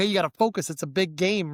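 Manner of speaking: normal talking voice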